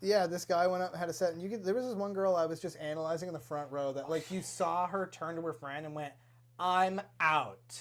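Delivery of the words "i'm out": loud, blunt, open delivery. Retelling how a girl in the front row turned to her friend: imitating someone saying it loudly. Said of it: "just loudly".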